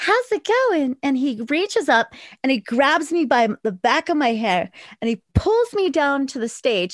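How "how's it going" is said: very high, sweet, cute performer's voice. Retelling greeting a man from the stage, in a cute entertainer voice. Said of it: "in my most cute, like, entertainer voice".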